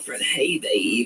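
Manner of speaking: put-on raspy American voice. Describing how he sounds, the speaker imitates it: raspy American girlfriend voice. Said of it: "like a, an American girlfriend... It's like a rasp".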